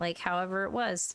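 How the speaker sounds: ordinary delivery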